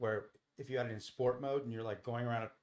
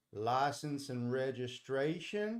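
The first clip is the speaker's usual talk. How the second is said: put-on small-town Texas cop voice with Texas accent. Retelling being pulled over by a huge Texas cop in a cowboy hat: imitating a Texas highway patrolman. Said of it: "he's like".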